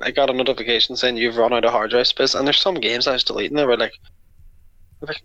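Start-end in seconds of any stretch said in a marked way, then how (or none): none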